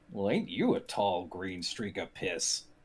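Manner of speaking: low, hushed ice troll monster voice. The ice troll keeps its eyes on Kroak and speaks: ice troll voice. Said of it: "the ice troll keeps its eyes on Kroak at this point and goes".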